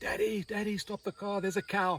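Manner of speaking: put-on very high little child's shouting voice. Father retelling what his child shouted from the back of the car, imitating a little voice shouting. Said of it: "I hear this little voice from the back of the car shouting".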